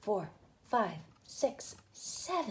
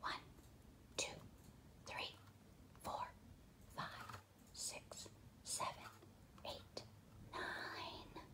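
soft, quiet whispered voice. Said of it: "I'm gonna whisper count".

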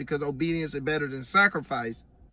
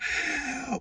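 high, mild mock scream of agony. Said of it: "he was just screaming".

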